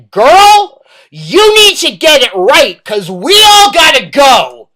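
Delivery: loud, fed-up, exasperated swooping shout. Recounting shouting at someone who kept messing up: retelling a top-of-lungs shout. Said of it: "at the top of my lungs".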